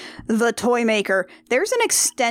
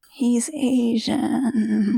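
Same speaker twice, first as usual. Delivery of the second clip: sounding defeated and resigned. Adding a remark about a movie's casting, sounding defeated. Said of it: "I've never heard you sound so defeated".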